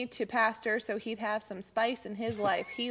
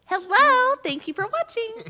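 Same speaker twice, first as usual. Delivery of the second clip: very high, loud princess voice; 12 semitones higher, 9 dB louder than usual. Showing the voice someone said she uses in her videos, Disney princess voice. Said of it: "it was my Disney princess voice".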